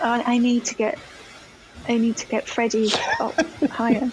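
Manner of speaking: whispered speech. Retelling what was said at the studio: imitating Richard whispering. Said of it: "Richard whispers to me and goes".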